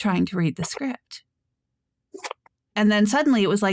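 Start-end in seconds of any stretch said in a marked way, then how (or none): 0.0-1.2 hushed, held-back, soft, quiet reading voice. Showing how a script ended up being read after the instructor said quieter: talking quietly. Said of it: "I would end up talking like this".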